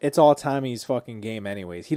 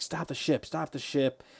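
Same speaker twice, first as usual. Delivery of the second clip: put-on breathy, whispered, drunken-sounding shout; 3 semitones higher, 6 dB quieter than usual. Retelling a scene where a father yells at his audiobook: imitating someone yelling. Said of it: "he's yelling".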